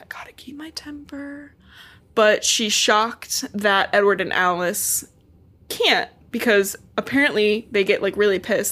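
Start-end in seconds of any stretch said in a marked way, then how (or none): 0.0-1.5 high, very quiet whisper under the breath. Retelling a book scene where a character whispers to herself: imitating a whisper to oneself. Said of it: "she just whispers to herself".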